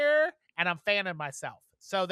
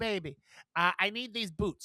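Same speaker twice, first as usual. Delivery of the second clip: put-on British accent. Retelling what a customer who came in for boots said, imitating a british accent.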